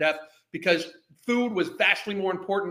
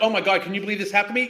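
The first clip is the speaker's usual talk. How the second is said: mocking, acted victim voice, fake disbelief; 4 dB louder than usual. Mocking a woman in a video, imitating her acting the victim. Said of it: "She's trying to act like this fucking, like, happened to her".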